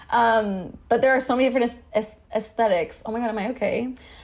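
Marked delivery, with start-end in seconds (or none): 1.9-3.0 quick stammered restarts on the word aesthetics. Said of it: "stuttering so much in this episode".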